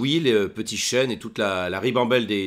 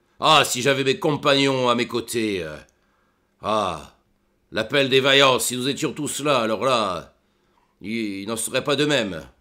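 put-on voice of an old dwarf. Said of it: "vous pouvez le dire, je suis un vieux nain".

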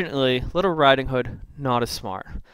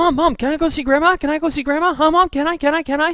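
put-on overexcited young girl voice, high and loud pleading; 14 semitones higher, 5 dB louder than usual. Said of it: "she's a little bit too excited".

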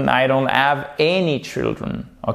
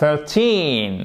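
put-on thirteen with stress on the second syllable, teen. Teaching English in French, saying thirteen with stress on teen. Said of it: "accent tonique sur le teen".

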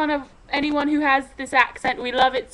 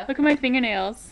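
normal talking voice

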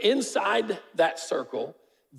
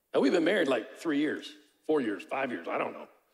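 usual speaking voice

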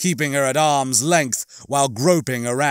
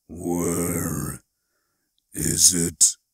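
very deep, low, rasping, hoarse growl of a voice; 8 semitones lower, 4 dB quieter than usual. Narrator reads a tusked creature questioning Zoe: low hoarse growl. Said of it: "low and hoarse, more of a growl".

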